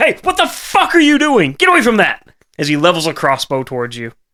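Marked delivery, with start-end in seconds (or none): 0.0-2.3 enraged, very high and loud screaming yell. Narrator voicing a man who catches a player pissing in the fountain: angry man screaming. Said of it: "the sound of an angry man screaming".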